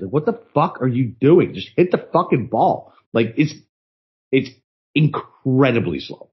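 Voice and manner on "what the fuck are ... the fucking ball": mild, held-in, impatient jeering tone. Retelling yelling at slow players from the tent: imitating own past yelling at players. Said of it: "just yelling at these players".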